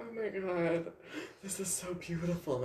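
high, tearful voice, crying through the words. Retelling a drive on Colorado back roads, imitating own past crying. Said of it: "I'm crying".

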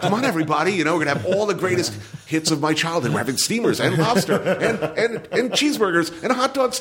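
high, overeager, cheery dad voice, rattled off quickly.

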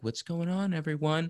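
put-on soft, mopey, very depressed emo-kid voice. Recalling leaning into the mic in old interviews: imitating depressed emo kid. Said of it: "I sounded like the most depressed fucking emo kid ever".

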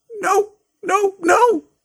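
very high-pitched, loud squeak. Narrating a story as the elf answers a boy's plea, squeaky Dobby voice. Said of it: "squeaked Dobby".

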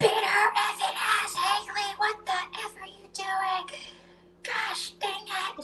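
very high, shrill screaming. Retelling how her mom yelled during fights: imitating her mom screaming. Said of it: "just screaming her head off".

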